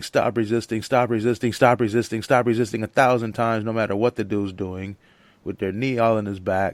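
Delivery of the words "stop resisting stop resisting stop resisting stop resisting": mock screaming, repeated over and over. Describing police harassing someone, imitating police screaming. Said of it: "they're gonna start screaming".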